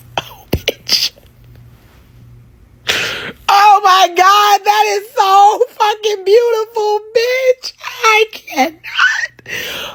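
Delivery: very high-pitched weeping through the words. Reacting to a post showing a man's daughter as a little girl, crying. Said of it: "I am crying".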